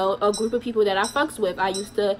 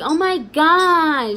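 snide put-on mockery, high, with drawn-out gosh; 6 semitones higher, 4 dB louder than usual. Speaker imitates a grown woman who mocked people; imitating her mocking tone. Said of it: "So when I mean mocking".

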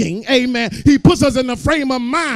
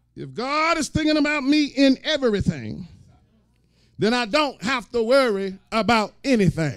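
very slow, deliberate, each word drawn out; 7 dB quieter than usual. Repeating a sentence again for listeners; saying it slower. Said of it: "Let me say that slower".

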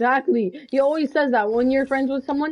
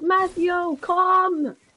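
mock calling voice, high, mild, toned down; 5 semitones higher than usual. Speaker retelling how his mom yells at him from downstairs: imitating mom yelling. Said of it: "She's yelling at me from downstairs".

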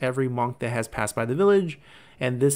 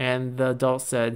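ordinary talk

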